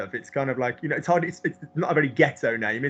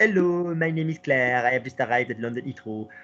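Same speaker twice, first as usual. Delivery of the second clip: French accent in English. Showing how a french accent sounds in english: french accent in english. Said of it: "Listen to a French accent in English".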